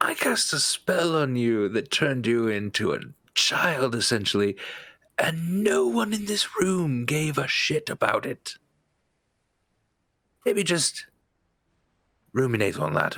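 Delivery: loud whisper others can hear. Leaning in to the one just restored to normal size: whisper others can hear. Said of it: "I'll just lean into him and sort of whisper".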